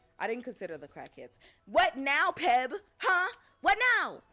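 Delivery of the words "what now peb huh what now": shrill, booming, very loud, high, drawn-out yell. Taunting another player during a game: yelling. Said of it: "I didn't mean to yell in your ear like that".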